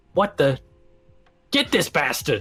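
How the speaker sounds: high-pitched, swooping, loud shout. Voicing the guard as the players run away: NPC shouting. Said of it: "you can hear him shout again".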